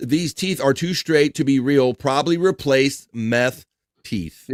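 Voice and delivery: ordinary delivery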